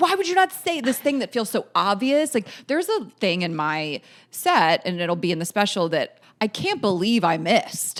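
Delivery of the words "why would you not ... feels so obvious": put-on high screaming outburst. Retelling watching comedy and reacting to a missed joke: imitating own screaming.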